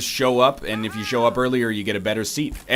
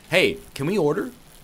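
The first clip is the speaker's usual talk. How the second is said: mock condescending tone; 5 semitones higher than usual. Retelling calling to a passing waitress to order; retelling a condescending tone. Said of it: "I said this a little more condescendingly".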